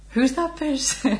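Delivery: high, slow, puzzled and baffled voice. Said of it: "you go".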